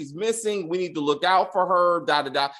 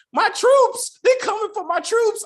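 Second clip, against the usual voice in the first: put-on screaming, higher and louder; 4 dB louder than usual. Mocking an actor's bad scene, imitating Larry screaming. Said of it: "his screaming".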